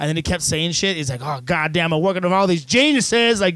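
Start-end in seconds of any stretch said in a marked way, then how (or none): 1.2-3.4 put-on raised, hollering, yelling rant. Retelling how a man yelled at his other employees: imitating someone yelling. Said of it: "just yelling at his other employees".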